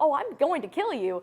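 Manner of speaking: acted sugary, polite menace. Recalling playing the butcher in makeup with a little girl present: retelling a sweetly polite threat. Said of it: "but I'm going to be like very polite about it".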